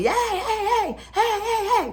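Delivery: high, loud mock yell. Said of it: "he's yelling for me".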